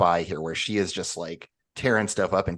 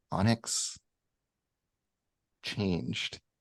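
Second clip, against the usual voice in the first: soft, hushed, almost a whisper; 3 semitones higher, 6 dB quieter than usual. Voicing a character who realizes something: hushed, almost a whisper. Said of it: "hushed, almost a whisper".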